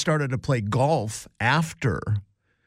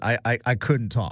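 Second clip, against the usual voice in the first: usual speaking voice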